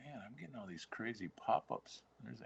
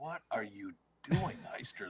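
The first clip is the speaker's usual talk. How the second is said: put-on cross, screaming voice; 4 semitones higher than usual. Retelling a fishing story, imitating the coach: imitating someone screaming. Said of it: "he starts screaming at me".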